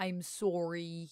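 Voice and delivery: very thick, over-the-top Canadian accent. Streamer apologizing for being late, in an exaggerated Canadian accent. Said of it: "I say in my most Canadian voice".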